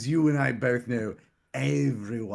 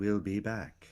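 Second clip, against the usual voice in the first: woman's voice, done precisely; 2 semitones lower, 4 dB quieter than usual. Voicing a character imitating a woman as they leave: imitating a woman's voice. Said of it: "in a perfect imitation of her voice".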